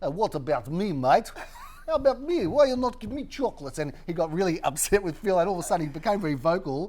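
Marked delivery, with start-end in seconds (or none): 0.0-3.8 put-on Russian accent, broken English, pitched up. Retelling an auction guest asking for chocolates, in a put-on russian accent. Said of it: "this guy says in a Russian accent".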